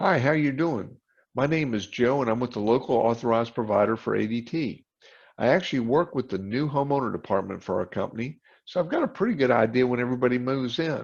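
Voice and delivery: ordinary talk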